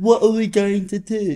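put-on high, puppet-like little kid's voice. Imitating a child extra in a film clip: imitating a muppet-like voice. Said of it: "Why does he talk like a muppet?".

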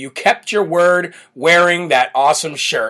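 ordinary talk

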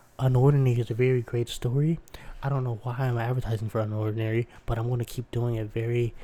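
gentle, very soft-spoken delivery. Filling an ad break while the other host gets water, very soft-spoken. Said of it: "very soft-spokenly because I'm enjoying talking like this".

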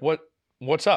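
ordinary talk, nothing marked

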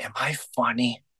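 put-on deeply vulnerable, exposed, unguarded, earnest tone. Retelling a late-night phone call from Chris: imitating a vulnerable question. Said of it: "he asked me in the most vulnerable way".

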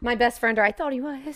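voice breaking partway through, near tears. Talking about someone once thought to be a best friend, voice cracking. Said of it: "your voice cracked".

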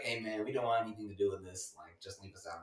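low, soft, odd put-on grown man voice. Telling a story about three grown men, the speaker quotes them in a put-on voice of the men. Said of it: "What is this fucking voice?".

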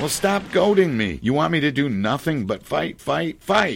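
loud, high-pitched tantrum, full fit. In a drama, a character argues with Blanche in a hotel; throwing a tantrum. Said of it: "you go into a tantrum".

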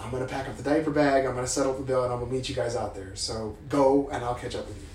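normal talking voice

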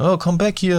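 very high-pitched hollering yell. Retelling how a seller shouted after them as they walked away, imitating the shout. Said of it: "så råbte han jo og skrej".

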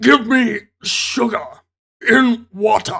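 alien voice, demanding tone. Recapping a movie scene, doing an impression of the alien wearing a husband's skin. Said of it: "That's the best impression I can do".

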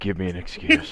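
put-on menacing, threatening cop voice. Imitating a highway patrolman waking up in the morning: imitating a menacing highway patrolman. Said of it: "he wakes up in the morning and says".

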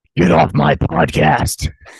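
very loud, rasping, slow, drawn-out villain growl. Greeting the other host in a put-on voice: Harrison Ford impression. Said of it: "that was more Bane than Harrison Ford".

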